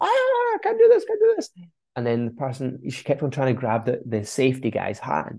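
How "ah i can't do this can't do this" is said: acted screaming and shouting, very high and shrill. Retelling a panicking bungee jumper at the top: imitating someone screaming. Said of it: "screaming, shouting, going".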